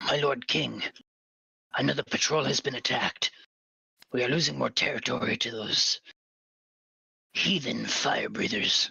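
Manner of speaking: soldier voice in a whisper. Voicing a soldier reporting an attack to his lord king: whispering soldier. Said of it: "the soldier whispers in Draconic".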